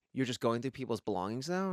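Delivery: ordinary talk, nothing marked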